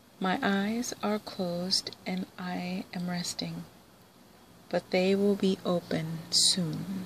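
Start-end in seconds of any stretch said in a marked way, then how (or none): none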